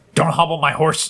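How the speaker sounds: combative, aggressive, high, forceful delivery. Asked by co-hosts to repeat the phrase one more time: aggressive. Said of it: "Say it one more time for us, [name]".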